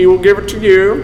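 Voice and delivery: Southern US accent. Leading others to repeat a verse line by line: Southern accent. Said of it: "how to say it in a Southern accent".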